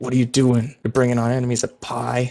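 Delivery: snarling, snarled dwarf voice. A game narrator voicing a character who drags the player aside: snarling. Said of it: "But he snarls at you and says".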